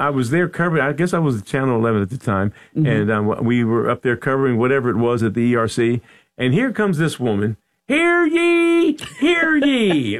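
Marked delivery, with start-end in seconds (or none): 7.9-10.2 colonial town crier voice, very high, proclaiming. Recalling a woman arriving while covering an event at the ERC, colonial town crier voice. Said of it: "Like she was a colonial crier".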